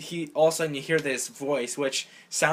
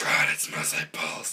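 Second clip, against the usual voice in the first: whispered, lurking creature-like voice; 11 semitones lower than usual. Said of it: "Gollum-y Batman".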